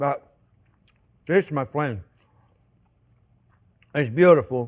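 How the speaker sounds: talking with mouth full of food. Tasting a wrap on the show, talking with mouth full. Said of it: "I always take too big of a bite. And then I can't talk".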